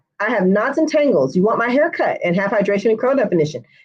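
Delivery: ordinary delivery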